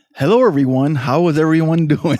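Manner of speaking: put-on radio announcer personality voice. Podcast co-host greeting listeners, trying a made-up radio personality voice. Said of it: "I was just trying to make one up".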